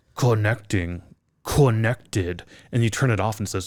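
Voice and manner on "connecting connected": really deep device announcement voice. Imitating the headphones announcing a Bluetooth connection: imitating a really deep headphone voice. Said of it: "Like this really deep voice".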